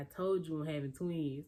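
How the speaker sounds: ordinary talk, nothing marked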